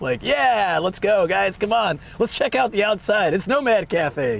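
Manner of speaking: excited, high-pitched livestream streamer talk. Showing how they talk on stream when excited: excited, higher-pitched stream voice. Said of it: "I will tend to be talking at a higher pitch".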